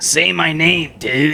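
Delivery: very slow delivery, every word drawn out. Retelling a guy's Steve-O impression of a Breaking Bad line: Steve-O impression. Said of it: "did a perfect Steve-O impression".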